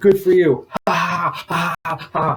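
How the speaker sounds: put-on high, very slow, drawn-out taunting laugh. Retelling a dream, laughing at the crowd: imitating own mocking laugh. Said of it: "I laughed at all of them".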